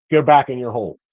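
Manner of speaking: gentle, mild brush-off with no meanness. Retelling what his wife said when she saw him coming, imitating a not-mean tone. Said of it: "Not not not mean".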